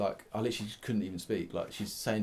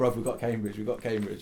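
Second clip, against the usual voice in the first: ordinary talk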